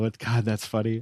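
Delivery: trying not to laugh while speaking. Recalling a funny sitcom scene while talking, trying not to laugh. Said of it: "I'm really trying hard now".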